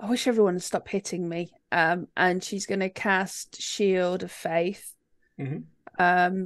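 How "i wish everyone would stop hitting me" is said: quick, barely voiced mumble under the breath. Playing a character's turn in a game, muttering under her breath. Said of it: "mutter under her breath".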